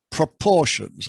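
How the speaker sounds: leaning hard on the word 'proportions'. A lecturer introducing hardy-weinberg proportions, with stress on 'proportions'. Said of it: "I stress the word proportions".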